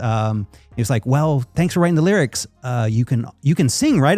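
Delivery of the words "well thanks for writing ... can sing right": ordinary delivery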